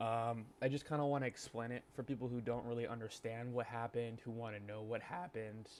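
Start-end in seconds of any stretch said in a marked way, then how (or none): 4.2-5.7 voice cracking and breaking mid-phrase. Introducing a video explaining yesterday's Afterlife drama, voice cracking. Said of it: "Voice crack".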